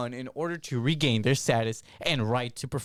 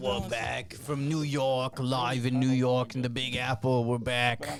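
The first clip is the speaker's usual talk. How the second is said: put-on New York accent; 3 dB quieter than usual. Announcing being back from New York: put-on New Yorker accent. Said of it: "I'm gonna keep doing this New Yorker accent".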